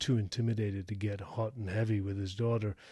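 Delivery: ordinary delivery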